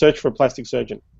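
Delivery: plain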